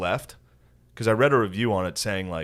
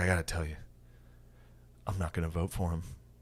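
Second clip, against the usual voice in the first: tearful, teary voice welling up; 3 semitones lower, 9 dB quieter than usual. Retelling a movie scene where a father tells his daughter something: imitating a teary-eyed father.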